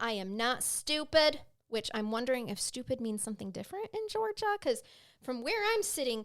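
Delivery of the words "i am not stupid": acted, very slow, emphatic, drawn-out shouted protest. Recounting a woman yelling at people from inside a building, retelling someone yelling. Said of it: "she is yelling at them".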